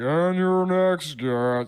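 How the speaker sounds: goofy, deliberately bad, slow, dumb announcer voice. Retelling how a show's announcer introduces guests: imitating a dumb announcer voice. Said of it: "he's doing a dumb voice".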